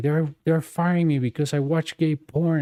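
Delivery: loud calling out, yelling. Retelling a handcuffed man shouting to everybody, imitating someone yelling. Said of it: "he was like yelling like to everybody".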